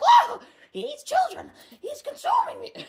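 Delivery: squeaked out high and slow. Retelling a man switching between two personalities, in a Mickey Mouse voice. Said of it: "was Mickey Mouse".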